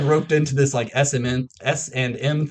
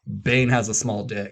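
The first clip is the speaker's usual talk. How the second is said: normal talking voice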